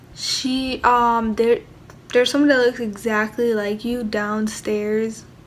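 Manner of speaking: ordinary delivery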